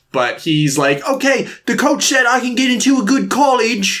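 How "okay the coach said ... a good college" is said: put-on British accent, higher pitch. Retelling his line about getting into college: put-on british accent. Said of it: "I don't know why he's British".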